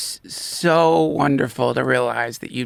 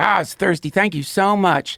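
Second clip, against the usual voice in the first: sweet-as-could-be southern voice; 9 semitones higher than usual. Retelling a man they gave food and coffee to, in a sweet southern voice. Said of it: "Nice southern, you know, voice, just sweet as could be".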